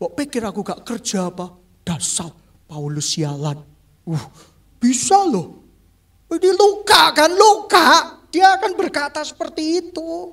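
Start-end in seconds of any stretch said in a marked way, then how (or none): 0.0-3.6 very low, hushed, touchy, wounded mutter. Preacher acts out how an oversensitive listener would react: mimicking a touchy, hurt person. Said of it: "orang yang baper akan menginterpretasikannya kayak gini".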